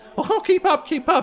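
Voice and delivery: overly anxious voice at a very high pitch. Voicing an old priest looking over his shoulder: overly anxious. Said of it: "seems to be overly anxiously".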